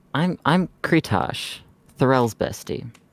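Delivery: smug, sarcastic, loud, sing-song delivery. Introducing the character to a villain who asked who they are: sarcastic, smirking. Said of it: "a really just sarcastic smirk at him".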